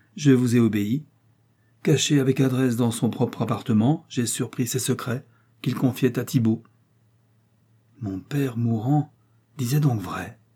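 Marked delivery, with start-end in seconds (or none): 8.0-10.3 murmured, crushed and dejected, sinking in defeat. De Mantoue, sinking back into his seat, responds to the spy's report; murmured, crushed. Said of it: "murmura de Mantoue en retombant assis avec accablement".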